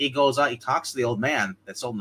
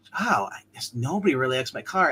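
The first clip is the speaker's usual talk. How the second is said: put-on stunned, disbelieving tone. Retelling a film scene where a character speaks: imitating a stunned revelation. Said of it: "the way he says it, ... almost like a, a revelation".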